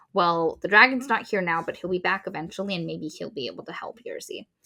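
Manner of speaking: ordinary talk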